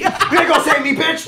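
very high, stretched-out yelling. Retelling how a friend screamed at helpers on a climb: imitating someone yelling. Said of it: "He's just yelling".

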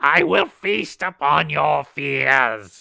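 very loud, very slow, rasping, booming monster voice. Voicing a creature as it looks down at a player: creature voice. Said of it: "it looks down at you and goes".

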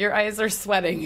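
normal talking voice

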